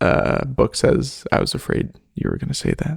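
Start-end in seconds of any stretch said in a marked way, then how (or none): 1.3-3.0 fast, whispered mutter under the breath. Voicing the character Book, replying to another character: muttered under his breath. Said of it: "under his breath".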